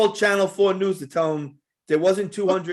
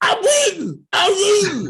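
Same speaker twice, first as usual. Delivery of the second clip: put-on very high, loud, swooping, wailing scream; 13 semitones higher, 5 dB louder than usual. Retelling a friend's drunken shower panic, imitating someone screaming. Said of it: "he's screaming".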